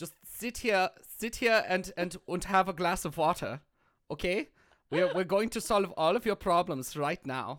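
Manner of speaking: fake, put-on German accent. Playing a doctor calming an upset patient in a skit: put-on German accent. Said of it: "I don't believe you in that accent".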